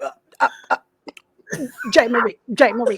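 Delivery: stumbling, hesitant calling out. Imagining what Shannon Sharpe would say at Total Wine: imitating Shannon Sharpe. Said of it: "I can't even imitate him like you did".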